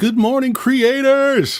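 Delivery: very high-pitched radio host voice. Greeting the audience of creators: Robin Williams Good Morning Vietnam voice. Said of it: "I read that in my head in a Robin Williams voice".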